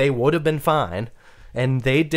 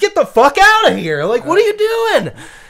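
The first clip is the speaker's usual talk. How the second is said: very high, loud, all-out swooping scream; 8 dB louder than usual. Retelling yelling at the driver beside them while swerving: retelling own screaming. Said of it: "screaming at this".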